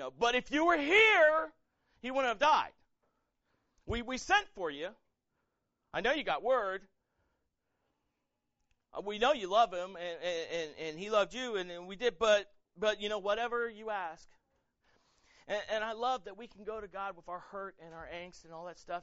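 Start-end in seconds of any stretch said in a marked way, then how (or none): 0.2-14.3 very loud, halting, acted-out sarcastic tone. Retelling Martha's words to Jesus after her brother died: imitating sarcastic Martha. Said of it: "she gets a little sarcastic".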